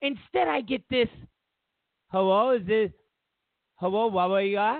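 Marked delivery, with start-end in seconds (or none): 2.1-4.8 put-on voice of a foreign call-centre agent. Retelling a call to a credit card company: imitating an overseas call center agent. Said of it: "I don't do voices real good".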